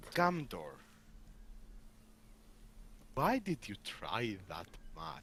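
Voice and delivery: muttered, barely voiced, hushed whisper. Speaking to Gamdor, whispering under the breath. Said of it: "I'm going to whisper under my breath".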